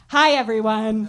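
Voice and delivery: insurance commercial announcer voice. Greeting the audience again to open the show: insurance ad voice. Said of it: "Now that was insurance voice".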